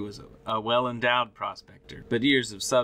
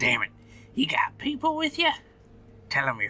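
put-on crusty, grizzled old prospector voice, swooping pitch; 4 semitones higher than usual. In a role-play scene, voicing a character: grizzled old prospector voice. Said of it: "The grizzly old prospector type".

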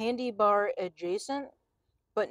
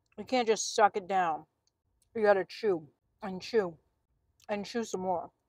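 speaking mid-chew with a full mouth. Tasting a chewy snack from a package, talking while chewing. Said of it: "I'm still chewing that bite".

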